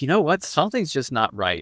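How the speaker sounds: ordinary talk, nothing marked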